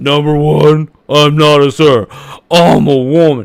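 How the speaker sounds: very loud, very slow, booming, drawn-out, derisive voice. Repeating the words of the person in the video to mock them: mocking imitation of Lily. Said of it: "I'm mocking this idiot".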